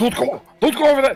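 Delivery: panicked shouting. Describing a character racing toward the pool after a phantom, panicked shouting.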